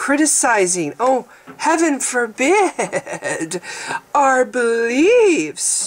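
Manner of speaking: strident sarcastic edge, high-pitched and very slow. A speaker getting sarcastic about people who punish differing opinions, sarcastic and strident. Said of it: "when I get sarcastic, I kind of get this strident note in my voice".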